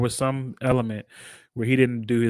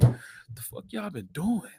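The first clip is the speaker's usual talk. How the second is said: mellow, disappointed tone, slow with swooping pitch; 6 semitones higher, 4 dB quieter than usual. Tell a friend about his tone in the video, imitating a mellow, disappointed tone. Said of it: "his tone was very much like".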